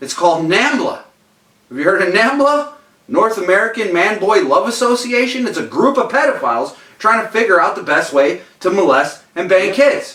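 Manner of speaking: agitated, worked up. Explaining a point to listeners and getting a little upset. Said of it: "I'm getting a little fucking upset".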